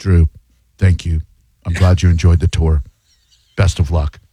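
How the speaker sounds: low, flat, terse, curt tone. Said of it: "you'll get back a".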